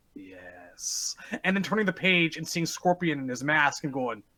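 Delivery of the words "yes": breathy whisper, mostly air. Retelling staring at a magazine drawing, in Shang Tsung voice. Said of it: "in that Shang Tsung voice".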